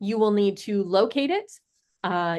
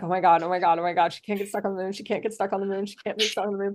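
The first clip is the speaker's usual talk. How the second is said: put-on frantic, desperate, babbling panic. Describing a character desperately cleaning and retelling his words, mock-panicked. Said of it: "desperately cleaning, being like".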